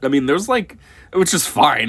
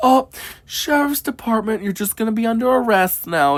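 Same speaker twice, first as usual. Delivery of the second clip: mock sweet, gentle tone, higher; 9 semitones higher than usual. Contrasting arrest styles, imitating a sweet arrest. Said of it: "rather than if it was sweet".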